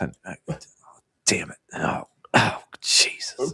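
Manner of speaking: mock murmured cursing. Retelling a man searching through plywood, imitating him muttering under his breath. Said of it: "murmuring under his breath".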